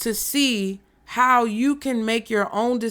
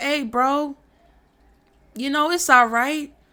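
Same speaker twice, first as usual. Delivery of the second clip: casual, soothing, calm put-on voice; 4 semitones higher than usual. Acting out the devil reassuring someone he sends away: imitating the devil. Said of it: "And the devil's like".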